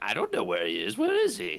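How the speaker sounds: high, swooping storybook witch character voice. Joking about others asking where a stuck player went: voicing the witch. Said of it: "And the witch is like".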